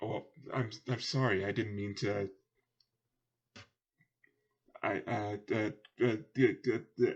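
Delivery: stuttering, stammering speech. Voicing a guard who apologizes after insulting a bodyguard: stuttering. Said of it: "he's just stuttering".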